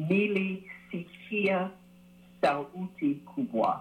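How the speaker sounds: slow, careful delivery.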